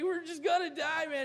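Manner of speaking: high, panicky, doom-and-gloom freak-out. Imitating a panicking soldier in a movie: imitating someone freaking out. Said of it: "He's just freaking out".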